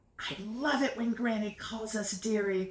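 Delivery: stage whisper, loud enough to hear. Reading a story aloud, telling a sister something: loud whisper. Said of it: "I loud whisper to Kim".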